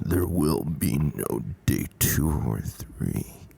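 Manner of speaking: low, slow, sinister, menacing, creepy voice. Retelling what a man said when he called the news, mock-creepy menacing voice. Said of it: "he said it in that really creepy voice".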